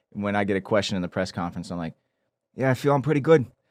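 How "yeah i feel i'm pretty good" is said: higher, louder New England accent. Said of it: "my voice is like a New England".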